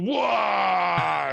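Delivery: high, rough, drawn-out orc battle cry. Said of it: "just shout to".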